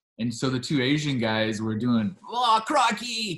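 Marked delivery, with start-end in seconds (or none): 2.3-3.4 very high, try-hard, put-on Australian accent. Retelling two guys joking with an australian customer: imitating an australian accent. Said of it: "doing their best Australian accent".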